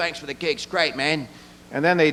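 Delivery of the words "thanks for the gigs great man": put-on English accent. Quoting a band's members calling him, in a put-on english accent. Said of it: "in an English accent".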